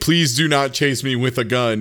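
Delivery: plain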